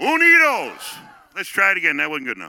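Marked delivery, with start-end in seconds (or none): 0.0-1.0 loud, very high cry from the gut. Leading a crowd in a rallying call on three: loud shout from the gut. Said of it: "say it with our loud, from our gut voice".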